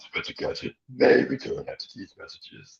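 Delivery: put-on, whispered, breathy cartoon villain voice. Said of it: "my Doctor voice, like Doctor Claus".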